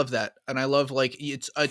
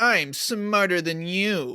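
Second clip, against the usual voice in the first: annoying put-on villain voice, higher pitched; 5 semitones higher than usual. Describing what the Arkham Riddler is like: Arkham Riddler impression. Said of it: "That was way too good an impression".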